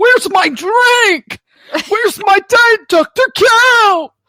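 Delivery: over-dramatic, very high cartoon voice outburst. Comparing a moment to a SpongeBob scene, in a dramatic SpongeBob customer voice. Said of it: "the dramatics of it".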